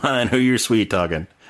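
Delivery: low, mumbled mutter under breath. Retelling a film scene, the speaker repeats a character's line, retelling a mutter under breath. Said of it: "he kind of says it under his breath".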